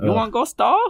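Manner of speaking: mock Chinese accent. Imitating the lady who woke up after hitting her head: fake chinese accent. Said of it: "all the tropes of the racist Chinese accent she used".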